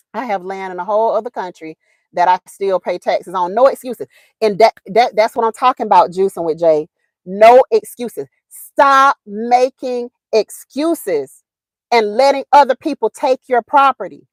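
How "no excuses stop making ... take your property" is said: slow, hammering, emphatic yell, each word spaced. Speaker urging listeners, forgetting the microphone is on: yelling. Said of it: "I forgot I got this microphone on and I'm yelling".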